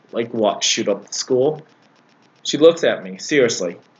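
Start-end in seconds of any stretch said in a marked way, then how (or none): 0.1-1.6 scornfully sarcastic, retorting tone. Retelling own reply to a vice principal: imitating own sarcastic remark. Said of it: "I said it sarcastically".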